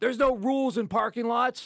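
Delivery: very high-pitched, shrill, shouted yell. Retelling what a pizza delivery guy yelled back: imitating someone yelling. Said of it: "yelled back at me".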